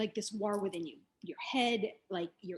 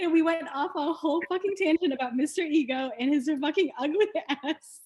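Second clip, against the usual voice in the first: talking through laughter, higher and louder; 7 semitones higher, 8 dB louder than usual. Apologizing to listeners for an unplanned tangent: laughing while talking. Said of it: "I'm laughing right now".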